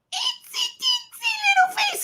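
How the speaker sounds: tiny squeaky itsy little voice, very high pitch. Showing a tiny clay face they made, in a small voice. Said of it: "Have to talk in a small voice when you do this".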